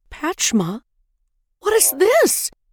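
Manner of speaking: very high, startled, alarmed outcry. The queen sees her daughter's bleeding hands: cry of alarm. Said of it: "The queen cried in alarm".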